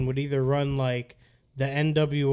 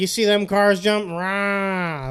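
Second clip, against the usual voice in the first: put-on older man's voice, higher and louder; 6 semitones higher, 5 dB louder than usual. Retelling what an older delivery worker said to dad: imitating Tom's voice. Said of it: "I remember the voice very vividly".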